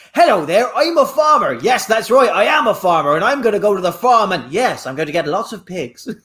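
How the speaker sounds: plummy, upper-class, really posh put-on accent. Recalling a favourite moment with a farmer character, imitating a posh voice. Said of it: "It was just really posh".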